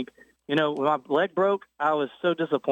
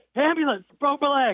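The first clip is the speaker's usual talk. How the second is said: put-on laughing yell, much higher; 11 semitones higher than usual. Recounting calling for an ambulance after breaking a leg, retelling a laughing yell. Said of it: "I'm laughing and yelling".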